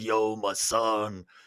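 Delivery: deep, low, soft growling mobster voice. Describing how some Russians talk, the speaker mimics the mafia type: deep growling mafia voice. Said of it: "have this deep growling voice".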